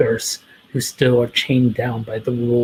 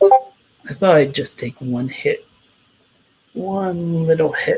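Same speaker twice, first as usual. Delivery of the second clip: mocking, sarcastic tone, higher pitch; 5 semitones higher than usual. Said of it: "Laughs c-, sarcastically and goes".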